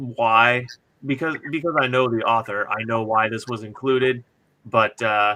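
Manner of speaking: ordinary delivery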